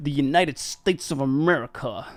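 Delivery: put-on American accent. Imitating a Scottish comedian doing an American accent: Limmy's put-on American accent. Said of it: "he's like".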